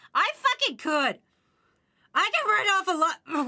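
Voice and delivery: very high, squeaking, cracking voice. Ranting indignantly about writing things off as business expenses, when the voice suddenly breaks mid-sentence. Voice cracking. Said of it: "I squeaked for some fucking stupid reason".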